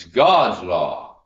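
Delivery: very loud shout. Recounting an argument, re-enacting shouting back at him: retelling own shout. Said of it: "I shouted back at him".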